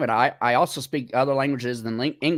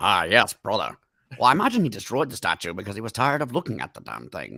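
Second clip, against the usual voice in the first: put-on low character voice with swooping tune; 4 semitones lower than usual. Asked by the others to do the voice: Mimir voice. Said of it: "you have to do the voice".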